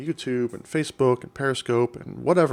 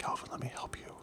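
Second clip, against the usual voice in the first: breathy, soft, put-on ASMR-style whisper. Joking that the bot whispers its help to a viewer: pretend whisper. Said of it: "We're doing some A S M R now".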